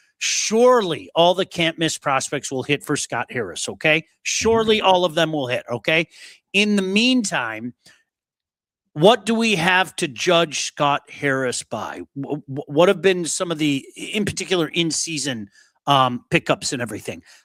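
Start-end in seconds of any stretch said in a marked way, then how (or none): none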